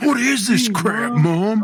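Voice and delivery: very slow, high, loud mocking teenage voice. Teasing a friend by acting out his teen self complaining to mom: imitating a friend as a teen. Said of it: "You'd be like".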